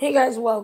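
sick-sounding, tired voice. Greeting viewers while sick: hoarse voice from being sick. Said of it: "my voice is dead".

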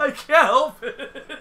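loud, high-pitched, slow laughing. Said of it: "it's contagious even to me".

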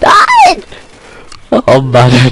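despairing, frightened cry. A streamer reacts to something in the game with pure despair and fright. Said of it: "Das war pure Verzweiflung mit etwas Erschrecken".

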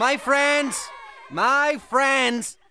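very high, drawn-out playful shout. A mouse addresses the other mice about tomorrow, playful shouting. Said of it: "(playful shouting)".

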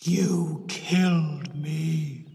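deep, dreadful, terrible voice, me stretched long. She speaks into a gutter hole toward her aunt, in a deep, terrible voice. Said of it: "she said in a deep, terrible voice".

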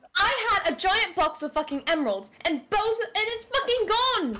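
agitated, heated, angry, worked-up outburst. Accusing the others of stealing emeralds from the boat: angry, worked up. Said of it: "calm down, calm down!".

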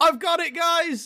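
very high, shouted call-out. A player speaking in character, calling out to the whole group: shouting to everyone. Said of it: "As I shout to everyone".

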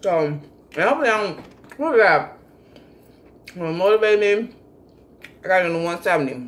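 talking with mouth full. During a mini mukbang, talking with mouth full. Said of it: "I talk with my mouth full".

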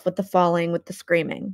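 plain reading voice

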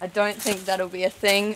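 normal talking voice

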